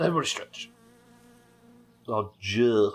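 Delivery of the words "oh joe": Hull-accented pronunciation. Demonstrating how a name is said, in a Hull accent. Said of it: "it's Joe in the Hull accent".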